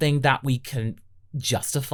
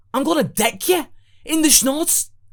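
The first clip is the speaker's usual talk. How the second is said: put-on Scouse accent, higher pitch; 11 semitones higher, 4 dB louder than usual. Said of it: "it's a Scouse accent".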